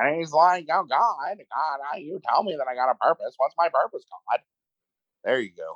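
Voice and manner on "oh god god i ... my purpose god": snotty put-on British accent. Imitating an actor's screaming movie performance: Nicolas Cage's snotty British voice. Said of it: "this is what he sounds like".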